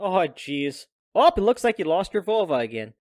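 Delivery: loud, fake Midwestern American accent. In a group bit, finally trying out a put-on Midwestern accent. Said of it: "We haven't done a Midwestern accent the whole time".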